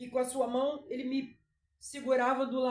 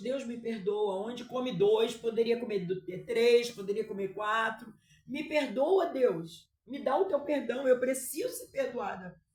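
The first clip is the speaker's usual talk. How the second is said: ordinary talk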